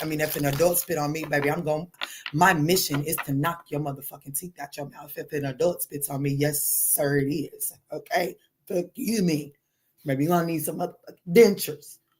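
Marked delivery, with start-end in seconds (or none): 2.3-5.1 protective motherly tone, lower and faster. Ranting about what she'll do if an adult spits on her, in mama mode. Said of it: "I kind of went mama mode".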